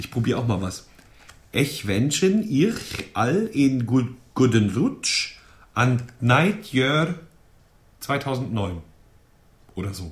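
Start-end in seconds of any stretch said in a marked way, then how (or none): 1.5-8.8 accent from Luxembourg. German speaker trying to pronounce written Luxembourgish: attempted Luxembourgish accent. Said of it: "Das war Luxemburgisch".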